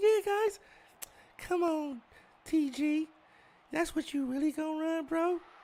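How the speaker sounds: very high-pitched, slowly stretched-out voice. Telling others how a man sounded on the mic, imitating a high-pitched voice. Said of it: "how high pitched his voice was".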